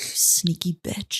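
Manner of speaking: put-on under-breath muttering. Retelling family game night, imitating a nephew muttering under his breath. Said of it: "he goes under his breath".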